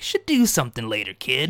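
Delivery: swooping, pitch-swinging killer doll voice. Imagining what the pair from Lord of the Rings said: Chucky voice. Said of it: "That's my Chucky voice".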